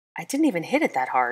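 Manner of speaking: ordinary delivery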